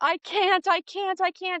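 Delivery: high-pitched, stretched-out, drawn-out screaming. Retelling giving birth, recreating own screaming while pushing. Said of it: "I'm screaming and I'm like".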